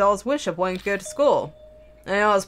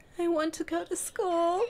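very high, tearful, hushed voice with sniffling; 10 semitones higher, 6 dB quieter than usual. Narrator touches a doll and hears its voice: quiet sniffling voice. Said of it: "I begin to hear a quiet voice".

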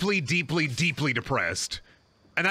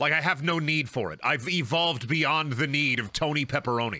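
usual speaking voice

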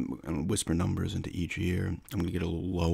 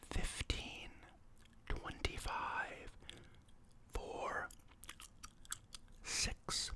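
quieter, softer voice, close to a whisper. Saying numbers lower into someone's ear for a hearing check: quieter, near whisper. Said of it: "I'm gonna get it a little lower now".

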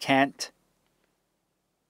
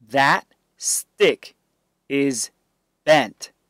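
plain reading voice

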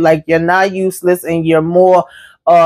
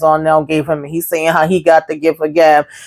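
plain

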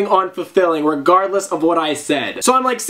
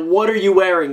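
normal talking voice

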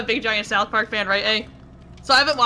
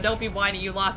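plain

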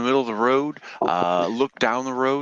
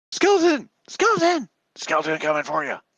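frantic, alarmed, panicked cry; 4 semitones higher than usual. Game narrator voices a character running back to camp, screaming in panic. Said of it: "She screams out".

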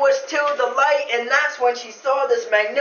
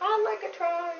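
put-on teeny, tiny, high little storybook voice; 6 semitones higher, 9 dB quieter than usual. Telling a story, the narrator voices a late volunteer after others failed: tiny little voice. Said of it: "this little teeny voice said".

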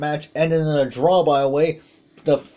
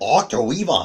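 put-on German accent and pronunciation; 4 semitones lower than usual. Calling a wrestling move in a German accent. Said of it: "nice German accent".

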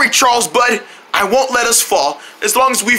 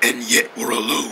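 very low, deep, dark, creepy voice; 13 semitones lower, 7 dB quieter than usual. Locked in with a companion, one adds a line to make it creepier, dark voice. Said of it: "what's with the dark voice?".

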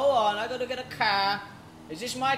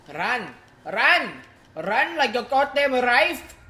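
fake Indian accent, spoken loudly with raised voice; 2 semitones higher, 5 dB louder than usual. Fleeing the cops, in a put-on indian accent. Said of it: "I was doing an indie accent just now".

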